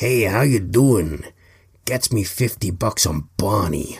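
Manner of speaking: bad put-on American accent. Placing a bet, the speaker talks in a bad american accent. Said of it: "Initialize bad American accent voice".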